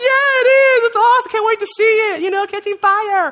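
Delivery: very high, loud giddy gush.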